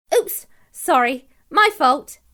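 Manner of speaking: bright, good-natured, cheery, unhurried voice. Narrator reads a character who just collided with Honno, cheery. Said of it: "said a cheery voice".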